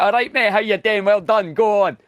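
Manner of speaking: heavy Glaswegian accent. Explaining Scottish accents, the speaker shows how people in Glasgow talk: thick Glasgow accent. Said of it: "Glasgow's really like you've got the thick accent".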